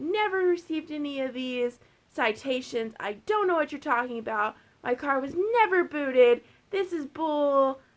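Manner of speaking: put-on furious, livid male yelling rant. Retelling how a livid customer with towed car yelled: imitating a furious man yelling. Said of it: "just yelling at me".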